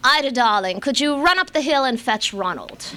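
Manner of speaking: affected upper-class voice. Speaker quotes Diane asking her a favor on the phone, Diane's affected rich voice. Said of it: "it was an affected rich person's voice".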